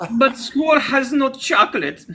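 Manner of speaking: put-on high little German boy voice. Playing the boy in an improvised tale, little German boy voice. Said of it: "like a little German boy's portrayal".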